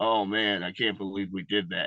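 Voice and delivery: mocking, imitated flat monotone voice. Mocking a promo he calls the most monotone of all time, imitating a monotone promo. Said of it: "was just all like monotone".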